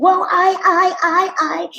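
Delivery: very slow, halting stutter on the word "I". Retelling a line-cutter's reply after being told off, imitating him stuttering. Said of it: "He started stuttering and".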